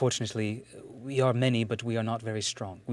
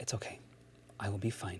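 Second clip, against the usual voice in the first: whispered under the breath, much quieter; 2 semitones lower, 10 dB quieter than usual. As she is about to be taken away, Ashlathen whispering under her breath. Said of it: "sort of whispers under her breath".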